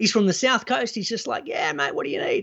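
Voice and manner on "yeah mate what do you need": put-on laid-back, relaxed voice, lower pitch. Retelling what a mortgage broker said: imitating a laid-back, chill guy. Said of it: "very laid back dude, very chill".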